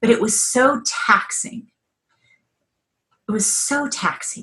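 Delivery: moved, feeling breaking through. Answering a question about their journey, getting emotional. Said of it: "I don't know why I'm getting emotional".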